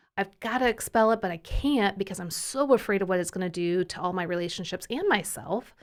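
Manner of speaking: plain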